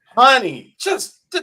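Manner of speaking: high, loud, exasperated, pressing tone.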